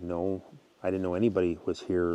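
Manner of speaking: ordinary talk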